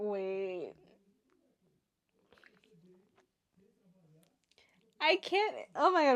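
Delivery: choked up, tearful, starting to cry. Reacting to a brother defending his little brother: choked up, starting to cry. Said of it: "why am I crying?".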